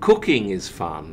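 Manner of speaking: stress on cooking, the first word. Showing how stress changes a sentence's meaning: stress on cooking. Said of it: "you might stress the first word".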